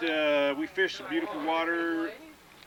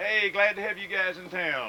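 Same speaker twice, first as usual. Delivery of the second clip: usual speaking voice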